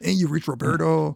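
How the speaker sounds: put-on Mexican accent. Retelling a character's voicemail from the movie: Roberto's Mexican accent. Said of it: "This is my Mexican accent".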